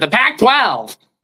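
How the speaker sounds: loud, super nerdy voice. Retelling how he said the conference name, in the most nerdy voice ever. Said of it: "I said in the most nerdy voice ever".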